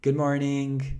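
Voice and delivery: sweet, friendly voice. Showing how good morning can be said, in a warm friendly tone. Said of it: "it can be very friendly. Like".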